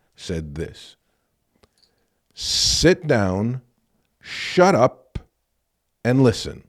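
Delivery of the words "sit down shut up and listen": grave, stern, very slow and deliberate. Recounting complaining about a grade, then Link's response; imitating Link's stern voice. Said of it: "with the most stern voice I ever heard come from his mouth".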